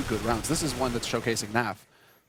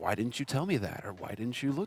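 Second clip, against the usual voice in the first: put-on reproachful, accusing tone; 3 dB quieter than usual. Describing a teammate's reaction when something goes wrong, mimicking a reproachful tone. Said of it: "reproachful tone in the voice".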